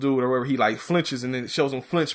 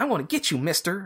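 super high-pitched squeaky voice; 5 semitones higher than usual. Retelling a tough-looking dude's line in a fight scene: super high-pitched voice. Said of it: "in a super, like, high-pitched voice".

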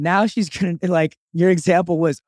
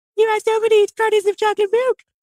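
very high, teasing, put-on imitated voice. Retelling how he mimicked his girlfriend's remark, in a mocking impression of girlfriend. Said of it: "he never does an impression of his girlfriend".

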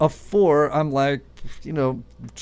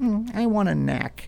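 put-on high, slow, drawn-out little-kid voice; 6 semitones higher, 4 dB quieter than usual. Imitating a daughter asking for a snack: imitating Maddie, a young daughter. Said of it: "my daughter Maddie actually uses this word".

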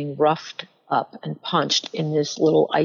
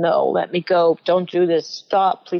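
put-on earnest begging, pleading word after word. Retelling being held by a man burning her hair: imitating her own past pleading. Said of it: "just pleading with him".

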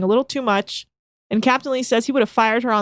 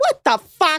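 trademark exclamation, outburst pitched high; 7 semitones higher than usual. Showing the other speaker an impression of them: imitating the co-host. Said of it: "that's my impression of you when you're like".

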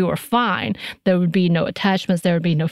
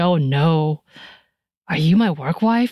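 play-acted slow, disbelieving, incredulous delivery; 2 semitones lower than usual. Retelling how he asked a question, imitating someone incredulous. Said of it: "he said it that way, incredulously".

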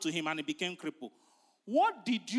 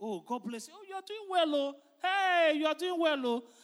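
delighted, high, excited voice; 8 semitones higher than usual. Describing meeting a friend unseen for ten years, imitating an excited greeting. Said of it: "him with excitement".

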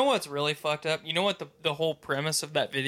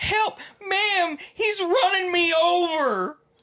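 acted, very high, full-meltdown panicked yell, over-stretched; 6 dB louder than usual. Retelling someone's cry as a driver backed up at 2 a.m., retelling a panicked yell. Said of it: "Just full meltdown".

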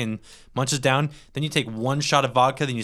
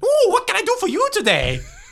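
goofy creature voice, very high and sing-song; 6 dB louder than usual. Imagining a mob boss greeting a visitor, the speaker does a Jar Jar Binks voice. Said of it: "he just goes".

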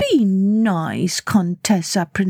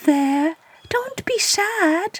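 very high, drawn-out, slow cooing; 12 semitones higher than usual. Reading a story aloud, characters comfort a sobbing character: cooing. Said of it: "cooed Lolita and Lupita".

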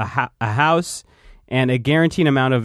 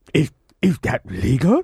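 odd, slow, drawn-out puppet drawl, swooping pitch; 3 semitones higher than usual. Asking whether a deal is legal: Viceroy Gunray voice. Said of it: "That's my impression of Vice-, Viceroy Gunray".

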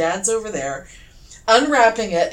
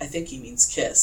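soft, hushed whisper; 6 semitones lower, 4 dB quieter than usual. Retelling what mom said about dad's gift: imitating someone whispering. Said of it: "my mom kind of whispers".

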